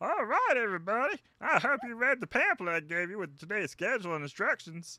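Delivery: very high, loud, dopey, derpy goofball voice. Voicing a character giving the group instructions: derpy voice. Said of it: "I'm just gonna give him a derpy voice".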